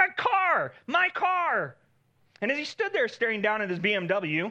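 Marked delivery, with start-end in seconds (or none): 0.0-1.8 mock very high, very slow, drawn-out shriek. Telling a story, acting out a man whose car door was torn off: retelling a scream. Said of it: "he's screaming at it".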